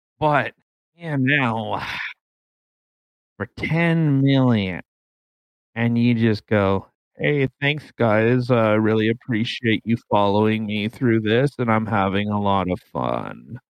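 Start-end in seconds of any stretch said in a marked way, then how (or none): 7.2-13.6 flat, very monotone, faster delivery. Imitating a creator thanking followers at 10 million, super monotone. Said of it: "What was that actor's name that was like super monotone?".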